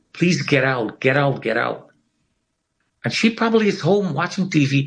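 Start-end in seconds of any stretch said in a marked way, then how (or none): none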